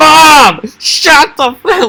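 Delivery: very high, very slow, loud, shrill yell. Retelling a video where someone yells at his mom: imitating someone yelling. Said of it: "I've seen the one where he yells".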